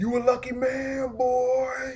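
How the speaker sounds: very high, slow, drawn-out yell. Retelling what a dude in the park yelled: imitating a dude yelling. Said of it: "some dude yells".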